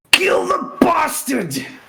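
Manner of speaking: shrill, loud yell, pitched very high. Playing the character Ravenheart as a spell flies his way, yelling. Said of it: "in a voice that is very unlike his ... just yell".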